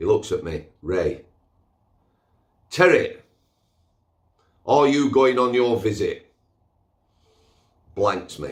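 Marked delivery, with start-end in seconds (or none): 2.7-6.3 loud, high, put-on Yorkshire accent. Retelling what a man asked him, in a Yorkshire accent. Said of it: "in my best Yorkshire accent".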